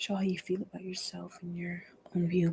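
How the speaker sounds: soft, unvoiced whisper.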